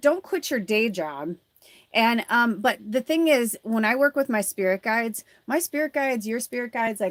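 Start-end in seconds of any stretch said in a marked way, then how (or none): none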